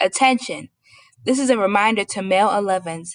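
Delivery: ordinary delivery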